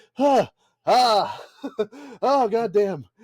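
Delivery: high, very slow coughing through a very drawn-out moan. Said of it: "and he's coughing".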